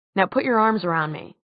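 ordinary delivery

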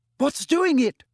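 very high, frightened, terrified voice. A student watching flesh vanish from bones demands an answer, terrified. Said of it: "Parvati demanded in a terrified voice".

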